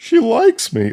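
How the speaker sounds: goofiest very high, silly voice. Retelling the movie's last line, Vic looking at the camera: Vic's goofy voice. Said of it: "in the goofiest voice".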